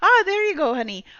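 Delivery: put-on Scottish accent, very high and quick. Voicing the character Bonnie: Bonnie's Scottish accent. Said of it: "she just seems like she's Scottish".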